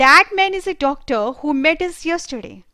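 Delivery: loud, one smooth unbroken run, no pauses. Lesson on essential relative clauses, reading with no pauses in the sentence. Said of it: "यहां पर मैंने कहीं भी पॉज नहीं लिया है।".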